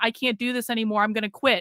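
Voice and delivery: put-on tearful crying voice. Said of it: "do a stream crying on the internet saying".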